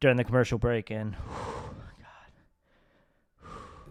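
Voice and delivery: out of breath. Explaining a yoga session during the break, out of breath. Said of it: "I'm a little out of breath".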